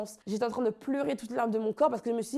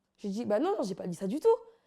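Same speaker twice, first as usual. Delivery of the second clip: plain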